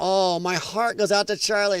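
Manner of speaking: hollow, fake-caring, insincere, put-on sweet sympathy. Imitating people who offer sympathy while smiling: imitating someone smiling while talking. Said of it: "They're smiling".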